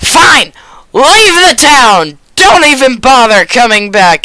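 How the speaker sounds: loud, furious, increasingly angry and fed up. Voicing a character throwing the players out: angrier and angrier. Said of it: "more and more mad by the second".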